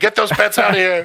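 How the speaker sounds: mock high-pitched screaming. Retelling his mom's reaction to his allergy, imitating mom screaming. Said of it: "My mom started screaming".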